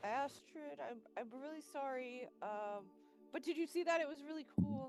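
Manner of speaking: sheepish, contrite, apologetic dog voice. Voicing a corgi who broke Astrid's project, apologizing: apologetic corgi character. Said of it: "he does have his ears pinned back".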